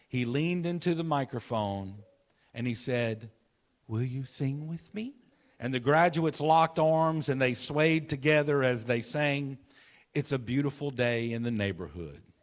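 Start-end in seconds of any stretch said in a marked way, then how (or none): 3.8-5.1 smallest possible, tiny, soft voice. Retelling how he leaned into the microphone before the graduates, speak in the tiniest Mr. Rogers voice. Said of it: "with the tiniest voice".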